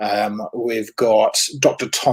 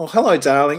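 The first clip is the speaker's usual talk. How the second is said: put-on sincere voice, pitched higher; 5 semitones higher, 3 dB louder than usual. Recalling how Vanessa always greeted people, imitating Vanessa's sincere greeting. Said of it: "the way she delivered it was just so beautiful and so sincere".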